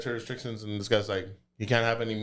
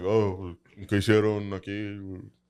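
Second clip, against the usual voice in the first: very deep put-on voice, much slower; 2 semitones lower than usual. Retelling a meeting, the speaker imitates a man's question in spanish in a super deep voice. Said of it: "got this like super deep voice".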